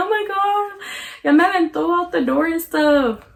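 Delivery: play-acted sobbing, tearful words through crying. Retelling being thrown out the door: imitating own past crying. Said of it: "And then I started crying".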